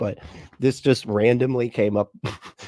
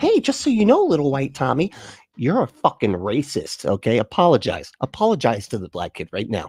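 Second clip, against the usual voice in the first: put-on lecturing voice; 3 semitones higher than usual. The speaker mocks a claim about what kids are told, retelling someone lecturing kids. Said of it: "They're like telling kids".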